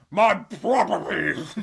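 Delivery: "properties" said very loud and mouth-filling. Explaining a trick learned in tenth grade, saying the word with a full-mouthed delivery. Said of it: "the more full your mouth is when you say the word properties".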